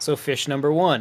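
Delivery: ordinary delivery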